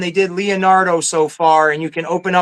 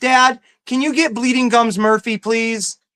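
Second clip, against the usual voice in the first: put-on high-pitched, pleading kid voice; 5 semitones higher than usual. Retelling his daughter asking him for a toy: imitating his daughter asking. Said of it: "like my daughter, that says".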